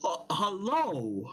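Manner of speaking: put-on uneasy, thick Scottish accent. Voicing a wary trader greeting travelers: uneasy thick Scottish accent. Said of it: "his Scottish is a little bit uneasy, thicker than others".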